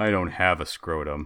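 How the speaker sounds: slow, sad, crestfallen, dejected voice. Retelling a friend answering the group with a sad look: imitating a sad, dejected friend. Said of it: "gets this sad look on his face".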